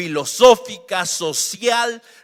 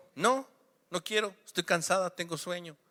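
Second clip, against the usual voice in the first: put-on stubborn, childlike, digging-in tone; 11 dB quieter than usual. Retelling a daughter's refusal to brush her teeth: imitating a defiant child. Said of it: "cuando nuestros hijos de repente nos desafían".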